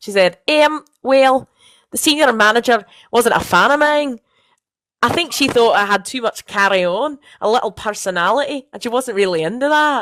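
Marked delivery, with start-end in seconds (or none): 0.5-4.2 mangled, butchered, put-on Scottish accent. Quoting what she said about the senior manager, put-on Scottish accent. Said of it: "I'll do a Scottish accent for this".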